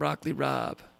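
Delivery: "rabe" said as "Rob", East Coast American accent. Pronouncing a food name the East Coast way: East Coast American accent. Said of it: "Got to say it with an East Coast accent".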